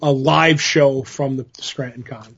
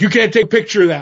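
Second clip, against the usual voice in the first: put-on big, tough New York accent, pitched up; 6 semitones higher than usual. Retelling what the guy at a New York show said: tough New York accent. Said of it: "with the big, tough New York accent".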